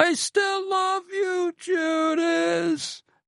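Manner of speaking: very high, slow mock yelling.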